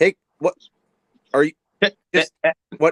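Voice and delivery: loud, choppy delivery with words cutting out. Joking about how to sound like a glitchy call: choppy speech skipping words. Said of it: "just skip a couple words every time you're talking".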